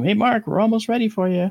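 high, loud yell as if across a room.

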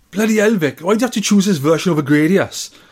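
high put-on Welsh voice. Saying the line again after being asked for an accent: Welsh accent. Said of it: "can you do a Welsh accent?".

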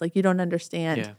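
ordinary delivery

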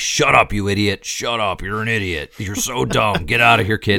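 put-on gruff, overbearing voice. Showing how Daredevil is voiced in this version: big gruff Daredevil voice. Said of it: "That's his Daredevil voice is like".

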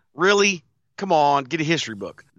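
normal talking voice

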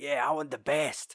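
put-on loud, brash, cocky, boastful voice. Retelling a film scene, quoting a fighter's challenge: imitating a loud cocky character. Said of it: "this big fucking positive character, and he's like".

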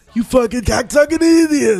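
very high, loud cartoon screech. Imitating Ren calling his partner an idiot: Ren impression. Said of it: "He never said fucking".

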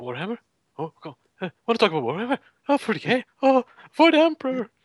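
very high, swooping, sing-song, up-and-down gamer bro voice. Adding to an impression of a friend: imitating Maddie. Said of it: "you have to also go".

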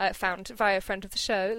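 ordinary talk, nothing marked

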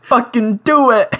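mock emotional outburst. Retelling a scene where a character is held over an edge: imitating a suicidal outburst. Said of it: "goes, like, full suicidal".

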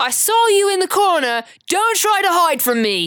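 piercing, shrill, very high scream. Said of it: "She's screaming at you".

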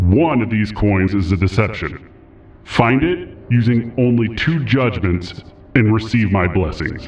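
deep, forceful stone idol voice. A statue above an altar of coins addresses the gathered party in a booming voice. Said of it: "A voice booms out from the statue".

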